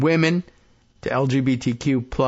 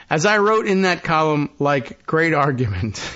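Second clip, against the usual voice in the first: ordinary talk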